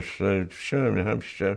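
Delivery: put-on slurred, drunk-sounding speech. Retelling a phone call with his son who talked like he was drunk: imitating drunk-sounding speech. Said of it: "he talks like he's drunk".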